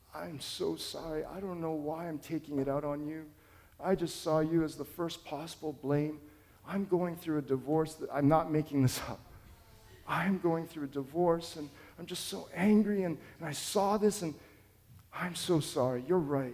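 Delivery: acted crying man's voice. Retelling a driver's tearful apology over a bumper scratch: imitating a sobbing man. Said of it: "He just started sobbing and broke down".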